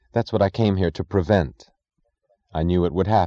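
ordinary delivery

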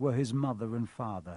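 plain reading voice

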